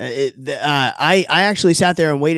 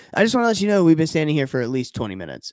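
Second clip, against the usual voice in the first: ordinary delivery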